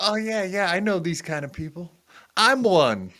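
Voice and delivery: goofy, dopey voice. Retelling what a man said, speaker is imitating Ray's voice. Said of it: "why are you doing Ray's voice?".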